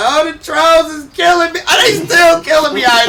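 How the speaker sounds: put-on very high, whiny, loud blubbering, like a crying baby. Joking about reading online trolls at home: mock crying like a baby. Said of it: "I be home crying like a baby".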